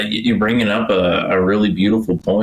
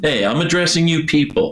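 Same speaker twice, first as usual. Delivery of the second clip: ballsy, bold, commanding, threatening voice, pitched up; 8 semitones higher than usual. Retelling how a leader addressed a whole people: imitating a ballsy speaker. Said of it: "just balls in his voice".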